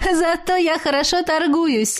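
open laugh through the words. A witch answering her fox familiar's complaint: laughing openly. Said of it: "Открыто расхохоталась я в ответ".

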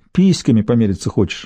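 usual speaking voice

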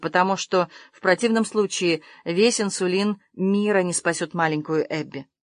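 usual speaking voice

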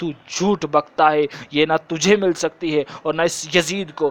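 ordinary talk, nothing marked

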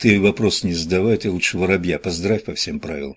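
ordinary delivery

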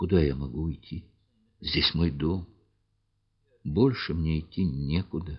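trembling voice. Reading a story, the woman answers the man telling her to leave, trembling voice. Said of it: "спросила она дрожащим голосом".

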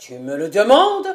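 very loud, forceful, energetic exclamation. Narrator reads a character answering a timid question, exclaiming energetically. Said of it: "s'écria Nicolas Trémel avec énergie".

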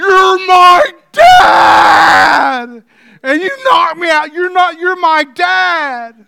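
put-on big cry. Retelling what a young man cried out to his dad: acting out a big cry. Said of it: "the voice that came out of this young man".

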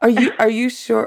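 mock frightened, terrified, high-pitched scared voice. Checking on a caller in labour on tape: terrified voice. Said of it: "The terror in my voice".

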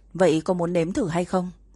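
ordinary delivery

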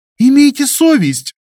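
high-pitched, outraged, indignant. Varvara answers Krivoy's question about Alena, indignant. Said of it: "возмутилась она".

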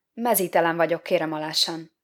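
ordinary delivery

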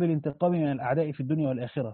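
ordinary delivery

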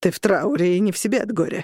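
snorting while speaking. Forsberg answers the grieving Cornelius with a snort. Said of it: "фыркнул Форсберг".

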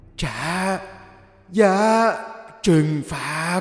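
raspy, hoarse, high demon hiss through the teeth. A narrator voices a demon-faced figure pinning them down, in a hoarse voice hissed through its teeth. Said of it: "với cái giọng khàn đục đặc trưng. Nó rít qua kẽ răng".

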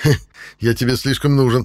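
smirking tone. Narrator voices the player answering the narrator's threat: smirking. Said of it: "усмехнулся игрок".

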